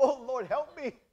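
loud, high-pitched yelling cry. Retelling how someone calls out only when they're sick: retelling a yell. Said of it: "why are you yelling?".

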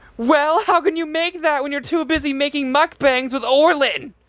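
piercing high-pitched scream. The narrator retells screaming at a man on her TV screen, retelling a scream. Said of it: "I screamed".

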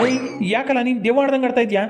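teasing tone spoken through laughter. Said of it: "ಏ, ನಗ್ತಾ ಇದ್ದಾನೆ".

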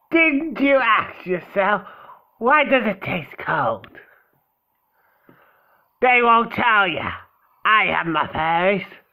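put-on swashbuckling pirate girl voice. Giving a pirate-looking character a voice, pirate girl voice. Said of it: "I'm gonna give you a pirate girl voice".

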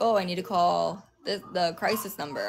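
ordinary talk

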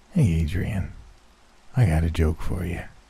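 soft, rasping, human-sounding creature growl, leaning in. Narrator reading the creature's line to Adrian, face to face, in Bongo's raspy voice. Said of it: "he spoke with that same human raspy voice".

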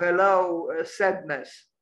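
plain

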